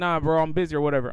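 normal talking voice

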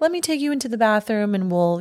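polished, upper-crust, very refined butler voice. Retelling a film scene, voicing the butler who spills on Jack: refined, very proper accent. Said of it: "really refined accent that sounds very proper".

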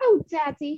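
high little girl voice, put-on British accent. Describing the little girl who practices her accent, imitating her british accent. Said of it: "That was my interpretation".

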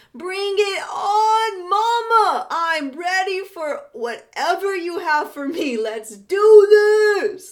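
slow, shrill, very loud, high, drawn-out scream. Retelling jumping into freezing water and screaming underwater: retelling a scream. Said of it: "I just screamed".

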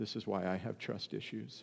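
muttered under the breath. Retelling what a son said on opening a chip bag: imitating a mutter under his breath. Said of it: "I heard him just say under his breath".

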